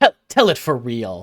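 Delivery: loud, sharp, curt snapped delivery. Voicing a woman who snaps at a fortune teller: snapping at him. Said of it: "snaps at him".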